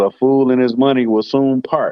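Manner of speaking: ordinary talk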